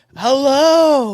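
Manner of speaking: very loud, over-the-top, drawn-out, high-pitched hello. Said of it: "over the top".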